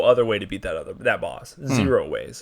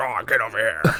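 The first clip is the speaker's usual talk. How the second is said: put-on orc monster voice. Imitating his wife with a put-on orc voice. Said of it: "she sounds like an orc".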